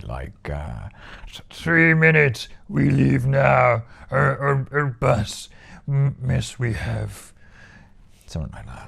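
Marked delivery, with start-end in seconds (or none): 1.3-7.3 slow, drawn-out, creaky and halting delivery. Imitating the way Yoda says things: imitating Yoda. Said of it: "some of the stuff he'd say".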